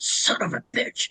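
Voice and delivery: put-on gravelly, raspy voice. Retelling what an old woman who had a stroke still says: imitating a gravelly voice. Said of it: "in a really gravelly voice".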